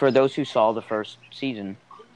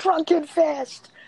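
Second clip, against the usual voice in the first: mock very high, thrilled, excited squeal; 3 dB louder than usual. Retelling how they screamed while watching a show in their room, retelling an excited scream. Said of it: "i screamed i was like".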